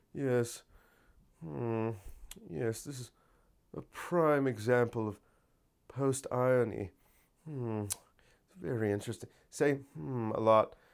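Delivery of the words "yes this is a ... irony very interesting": put-on British radio accent, quieter. Telling a listener how to say the phrase, demonstrating a Brit-on-NPR accent. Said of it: "Pretend you're a Brit on NPR".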